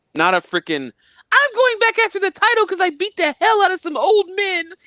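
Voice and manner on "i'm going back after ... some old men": super high-pitched, very high put-on voice. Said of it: "Why did you go really super high pitched voice there?".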